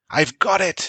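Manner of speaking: shrill, very high, ringing call out. Bran reaches the hilltop and grabs the bucket, shouting. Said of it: "shouted Bran".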